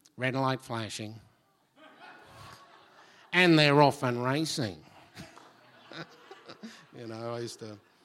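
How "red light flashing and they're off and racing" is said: loud racetrack commentator voice. Former bookie's clerk who loves the races, doing a race caller voice. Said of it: "I could put on a good voice for you".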